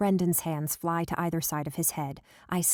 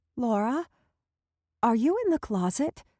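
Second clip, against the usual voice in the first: appalled, aghast, horrified tone with raised pitch; 6 semitones higher than usual. Reading a story where a mother finds her daughter hiding: horrified voice. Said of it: "in a horrified voice".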